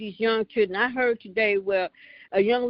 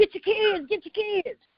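very high, hollering voice; 11 semitones higher than usual. Retelling calling to the block about the kids in the street: imitating own hollering. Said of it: "And I'm steady hollering".

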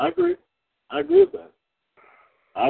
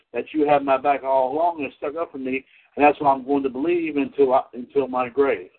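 usual speaking voice

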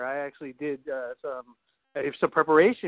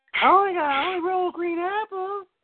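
very high, squeaky, silly, mocking put-on voice. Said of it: "it's like".

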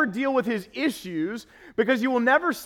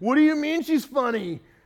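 suspicious, possessive, jealous man's voice; 2 semitones higher than usual. Acting out a boyfriend hearing his girlfriend praised, imitating a jealous guy voice. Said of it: "that's the jealous guy voice".

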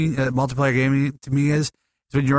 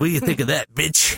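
put-on taunting, muttered under breath. Retelling how a woman trash-talked her husband under her breath: retelling muttered trash talk. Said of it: "She's shit talking to him".

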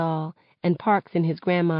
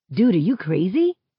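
ordinary delivery

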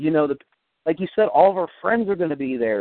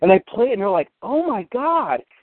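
usual speaking voice

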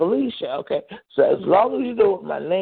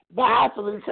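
ordinary talk, nothing marked

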